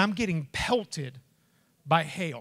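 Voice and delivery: ordinary talk, nothing marked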